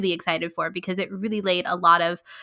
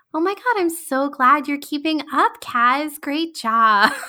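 mock, syrupy, sweetly condescending tone, pitched up; 8 semitones higher, 4 dB louder than usual. Recounting a flying scene, quoting Tora speaking to Kaz: Tora's sweetly condescending tone. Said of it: "her tone of voice is just so sweetly condescending".

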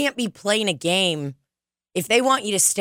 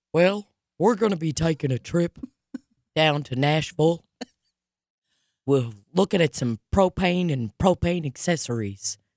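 put-on country southern drawl; 2 semitones lower than usual. Joking about how country people say Nashville, speaker goes into Hank Hill voice. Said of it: "I sound like fucking Hank Hill".

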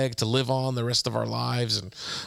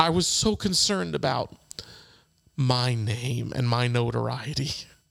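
voice catching, choked up with emotion. Recalling their time in ministry, the speaker confesses while choking up. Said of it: "I'm choking up because this is so real".

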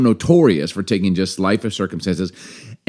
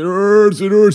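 very high, loud, stretched, drawn-out acted crying; 13 semitones higher, 5 dB louder than usual. Retelling how a comic-strip kid complains after getting hurt: imitating Calvin crying. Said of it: "he'd be crying".

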